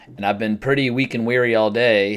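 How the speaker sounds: usual speaking voice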